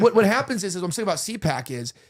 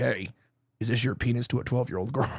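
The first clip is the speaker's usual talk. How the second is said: put-on, burly, tough big guy voice; 7 semitones lower, 5 dB quieter than usual. Acting out a big dude confronting someone: acting out a big dude. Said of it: "big dude show up. He's like".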